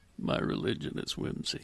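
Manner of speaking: hushed, breathy whisper, close and soft. Performing a line after another asks for it like David Blaine: David Blaine impression. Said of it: "You gotta say it like David Blaine".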